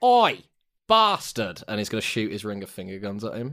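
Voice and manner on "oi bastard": very high, loud, shouted taunting jeer. Voicing a flying character who taunts an enemy: shouted taunt at an enemy. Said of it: "looks Trevor dead in his metallic stony face and goes".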